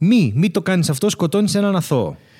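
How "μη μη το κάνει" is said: ordinary delivery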